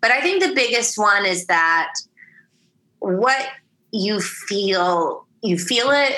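tearful, speaking while crying. Answering a question about the film's biggest takeaway, crying while talking. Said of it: "I'm crying".

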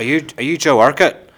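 put-on broad Northern Irish accent. Retelling a question one of the Leeds-supporting lads asked, in a broad Northern Irish accent. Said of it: "In a very broad Northern Irish accent".

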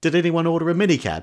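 full-throated, very high, very loud yell. Telling an anecdote, act out the person at the door who turns around, imitating someone shouting out. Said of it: "he turns around and shouts out".

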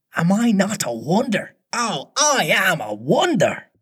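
conceited whisper. Top-heavy with conceit, he boasts to her alone, conceited whisper. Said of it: "he whispered to her".

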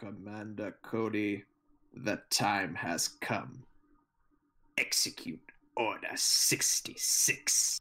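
put-on low, slow, raspy, growling dark villain voice.

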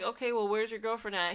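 plain

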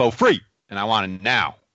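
put-on aggressive, demanding tone. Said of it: "Aggressive, [name]".

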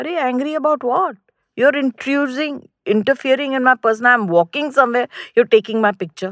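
put-on indignant, heated, high-pitched angry voice. Retelling an own reply to someone taking a picture: imitating own angry retort. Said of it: "She only knows how to get angry".

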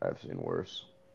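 mutter, very soft, under the breath. A player speaks in character so the other players can't hear: very quiet. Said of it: "Very, very quietly".

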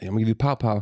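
ordinary delivery

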